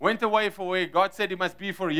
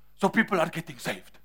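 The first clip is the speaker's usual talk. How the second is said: deliberate, best-effort put-on German accent; 2 semitones lower than usual. Retelling how Reinhard turned to the man beside him after a 5-minute talk, in Reinhard's best German accent. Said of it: "in his best German accent".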